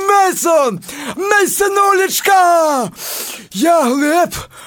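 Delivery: put-on shout of joy. Telling a story of how they called out to a friend in excitement, retelling a joyful shout. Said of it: "Я з того всього почав кричати".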